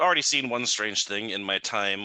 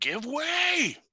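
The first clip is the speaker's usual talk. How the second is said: shrill, high, menacing, intimidating shout. Player's character pushing through a crowd, shouting at people, intimidating shout. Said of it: "put on my most intimidating face and shout".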